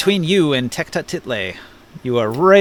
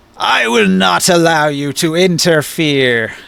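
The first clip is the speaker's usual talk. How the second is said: put-on threatening villain voice; 2 semitones higher, 4 dB louder than usual. Voicing a character who glares at the party and threatens them: Tecta Title threatening voice. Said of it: "look up and say".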